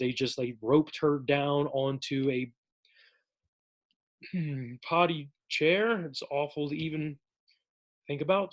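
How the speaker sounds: choked up, voice catching, emotion breaking through. Telling how a girl was kept tied down at home: choked up. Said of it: "I didn't think I'd get choked up".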